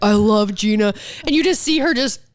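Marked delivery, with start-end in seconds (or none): none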